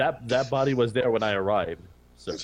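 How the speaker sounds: plain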